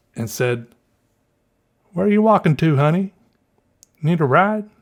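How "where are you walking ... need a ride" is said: put-on heaviest Southern accent, laid on thick, higher pitched. Retelling what ladies in a car asked: imitating a thick Southern accent. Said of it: "these ladies had the thickest Southern accent".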